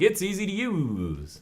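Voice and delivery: the word "use" stretched out, slow and high. Retelling a product review, imitating the Lazy Game Review guy. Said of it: "this is my impersonation of him".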